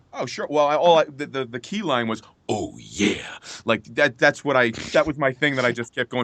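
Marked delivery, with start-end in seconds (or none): 2.5-3.4 very low, deep wrestler-style voice. Answering a request for a Macho Man line: Macho Man Randy Savage voice. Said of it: "can you do a Macho Man line for us?".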